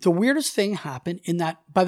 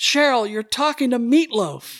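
loud, raised yell projected over noise; 5 semitones higher, 3 dB louder than usual. Speaker retells yelling across the room to Cheryl, retelling a yell across the room. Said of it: "I'm yelling across the room".

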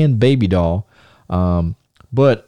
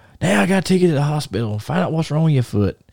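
irritated, fed-up, angry dad voice, complaining; 4 semitones higher, 3 dB quieter than usual. Retelling a dad's words about taking the kid to hospital: imitating an angry dad. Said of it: "he's pissed off".

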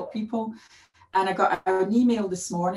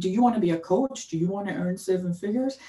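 sudden switch to a put-on American accent. Quoting coaching sales pitches the speaker dislikes; american accent. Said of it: "you switched to an American accent for that part".

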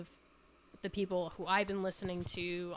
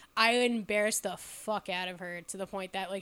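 normal talking voice

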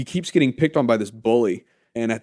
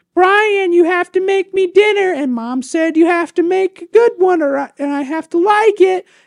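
shrill, very high, very loud annoying voice; 8 dB louder than usual. Retelling a TV episode, the sister calls from upstairs to her brother: imitating annoying sister. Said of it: "his sister's shown to be very annoying".

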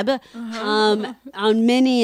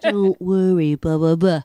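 put-on, very serious voice, lower; 3 semitones lower than usual. Retelling how a little brother teased at dinner: imitating Carl's very serious voice. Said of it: "He's got a very serious voice".

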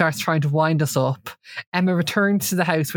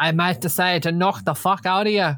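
bad, unconvincing put-on Belfast accent; 2 semitones higher than usual. Retelling what Jason said after the dance, poor Belfast accent as Jason. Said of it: "What was that accent?".

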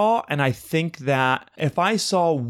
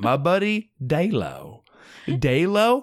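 put-on heavy, slow, thick Southern twang. Joking about a misspoken name, put-on thick Southern twang. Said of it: "my thick Southern twang".

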